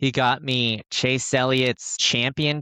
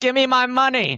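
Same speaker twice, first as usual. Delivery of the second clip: put-on, very high, shrill, excited screaming yell; 11 semitones higher, 3 dB louder than usual. Recalling winning a betting pool at the end of a race: retelling own screaming. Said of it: "I was screaming at the end of the race".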